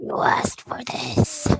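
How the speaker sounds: eerie, creepy, breathy, raspy whisper. Retelling a voice heard by the ear, in a creepy raspy voice. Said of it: "can I do a creepy voice?".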